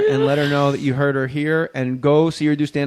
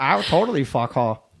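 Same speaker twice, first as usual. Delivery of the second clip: stupid, dumb-sounding voice. Speaking as the little dog Mabel: Mabel's stupid voice. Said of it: "that's Mabel's voice. Everybody has a stupid voice".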